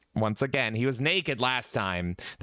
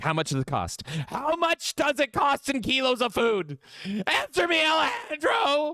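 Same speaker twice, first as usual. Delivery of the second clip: mock desperate, insistent, very high, rising pitch. Retelling a desperate buyer's demand: imitating someone desperately demanding. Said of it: "He's like".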